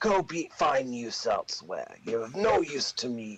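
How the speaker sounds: angry, dismissive goblin chieftain voice. A game master voices a chieftain who slaps a player after a failed roll, angry chieftain voice. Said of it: "The chieftain goblin raises his hand, / And he picks his staff up, / You and the chieftain".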